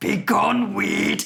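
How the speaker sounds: hammy, rough, grand theatrical stage proclamation. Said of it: "doing this voice".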